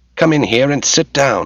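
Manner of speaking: high, snapped, sharp delivery. Reading a man's line after he suddenly broke the silence; snapped. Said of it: "he snapped".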